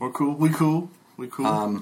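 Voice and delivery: put-on Scottish accent. In a game scene as a gnoll walks toward the group, in a Scottish accent. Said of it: "Not say that in Scottish accent".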